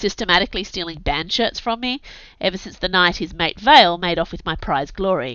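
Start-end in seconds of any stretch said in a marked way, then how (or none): none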